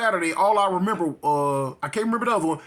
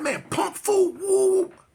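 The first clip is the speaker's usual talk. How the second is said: high, drawn-out mock angry outburst; 13 semitones higher than usual. Retelling his own past words when he got mad and went off. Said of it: "So now I'm going off".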